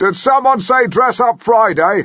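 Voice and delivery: shrill, very high, loud booming bellow. Recounting calling out at work while striding across the kitchen area, retelling a bellow. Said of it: "I bellowed".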